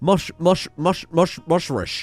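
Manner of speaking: slow, stumbling, halting attempt at the word mushrush. Struggling to pronounce a word while reading out unlocks, doing a Sean Connery impression. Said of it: "I feel like Sean Connery".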